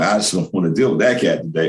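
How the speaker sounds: ordinary delivery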